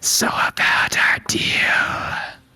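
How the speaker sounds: breathy, loud snarling monster voice. Game master voicing the Nothic speaking in a player's mind, snarling. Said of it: "the Nothic snarls and says in your brain".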